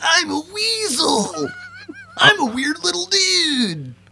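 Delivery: very high, swooping voice, "dude" drawn out. Guessing a movie's tagline, doing a Pauly Shore voice. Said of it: "I don't think that's how his voice sounds".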